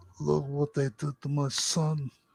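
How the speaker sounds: hushed, very quiet, bad fake Italian accent. Brainstorming a bad NPC for a campaign, the speaker tries a bad Italian accent. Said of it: "that's another bad Italian".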